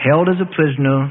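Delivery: ordinary delivery, nothing marked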